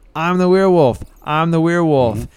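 unhinged, high, wild shrieking scream. Narrating a game scene as the swamp hermit pops out at the kids, screaming. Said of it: "pops out of the weeds and screams".

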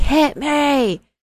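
high, taunting scream. Retelling a wrestling match, imitating a wrestler screaming. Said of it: "Moreau was screaming, like".

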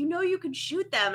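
mock screeching, very high-pitched screaming yell. Retelling a husband's reaction during a game: imitating husband screaming. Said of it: "screaming at me".

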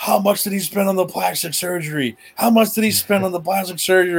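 shrill mock screaming, repeated twice over. Recalling a chaotic moment with a double referee, retelling Hogan screaming. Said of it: "Hogan was screaming".

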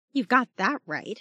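muttering, low and indistinct. Replying to a woman admitting things didn't go as planned, muttered. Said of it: "muttered Jazz".

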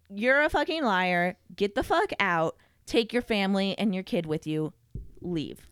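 normal talking voice

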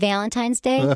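Michigan regional accent. Repeating the phrase on request to show off a Michigan accent. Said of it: "Say it again".

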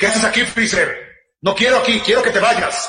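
fighting-mode warrior voice. Showing Goku's voice changing when he enters warrior mode: warrior-phase Goku voice. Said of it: "y el Goku guerrero".

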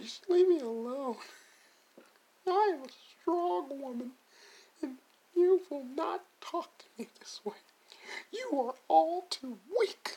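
very high, slow put-on voice through laughter. Mocking how she would answer critics, laughing: imitating her voice while laughing. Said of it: "I'm not doing her voice and crying. I'm laughing".

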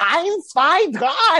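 high, loud, squeaky, weird comic character voice. Retelling a moment before a camera: imitating Neil Kinnock's weird comic voice. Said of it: "sort of this weird kind of comic character".

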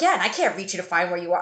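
mock panicky, flustered, rushed, frantic mother voice. Retelling a mom's words after she couldn't reach the speaker: imitating frantic mom.

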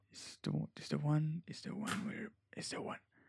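hushed voice. Telling a partner the problem secretly so others can't hear: hushed voice. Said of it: "I'm talking like this so they can't hear me".

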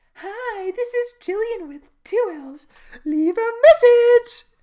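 annoying voicemail voice, very high, belted and drawn out. Retelling a film character's voicemail greeting: imitating Jillian's annoying voicemail voice. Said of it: "a very annoying Jillian-like message".

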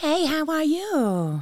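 put-on very high, swooping Valley girl accent. A speaker shows off a valley girl accent, which a listener praises. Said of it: "That's a pretty good accent".

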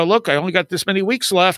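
ordinary talk

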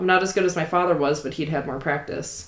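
plain reading voice

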